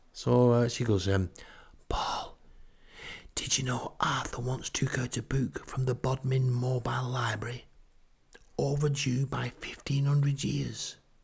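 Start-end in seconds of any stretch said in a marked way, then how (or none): 1.9-11.0 hushed, level, secretive, conspiratorial spy-thriller whisper. Retelling what a retired librarian said: imitating a whisper. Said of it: "who whispers everything like she's in some kind of spy thriller".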